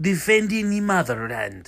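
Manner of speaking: ordinary delivery, nothing marked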